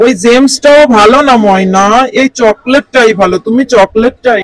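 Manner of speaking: deep-voiced father voice.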